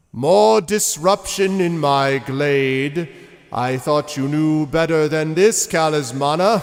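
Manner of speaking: big, high, loud voice. Narrating a scene, a newcomer scolds a character for disruption: loud voice. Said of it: "this loud voice that says".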